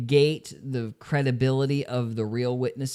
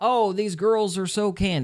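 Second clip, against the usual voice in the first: put-on screaming, pitched higher; 8 semitones higher than usual. Retelling how Jeremy reacted to a witness: imitating Jeremy screaming. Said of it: "he was sitting there screaming".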